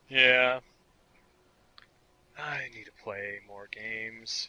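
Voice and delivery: depressed, gloomy-sounding voice. Admitting they need to play more games: sounding depressed. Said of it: "You sound so depressed".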